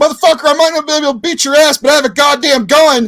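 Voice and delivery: high, shrill screeching yell at full volume. Retelling Cornette confronting Brock Lesnar backstage: imitating Cornette yelling. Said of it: "imagine Cornette yelling at Brock Lesnar".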